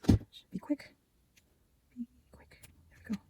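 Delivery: hushed, soft whisper under the breath. Adding decorating to a craft project with hot glue, whispering. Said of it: "I have to whisper like that".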